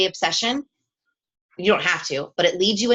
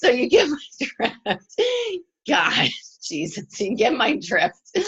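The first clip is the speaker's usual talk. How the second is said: slow, high, helpless laughing fit. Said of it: "I'm laughing".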